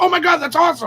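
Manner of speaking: freaked-out excited squeal. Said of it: "she was freaking out".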